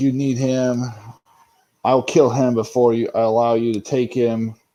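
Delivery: ordinary delivery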